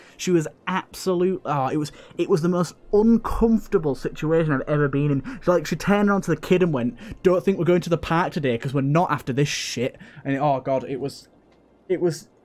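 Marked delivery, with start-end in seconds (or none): none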